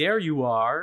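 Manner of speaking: synthetic, mechanical robot voice. Explaining a phrase she heard while going through photos, robotic voice. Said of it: "c'est vraiment une voix robotique".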